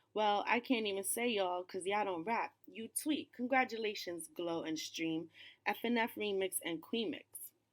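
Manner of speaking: usual speaking voice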